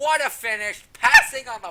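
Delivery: loud call with voice breaking and cracking. Calling the finish of a race, voice cracking. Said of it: "my voice cracked".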